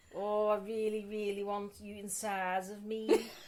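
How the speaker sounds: fake, low, seductive come-on voice. Trying to say something seriously sexy as a joke: mock seductive voice. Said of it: "If you said something seriously sexy right now".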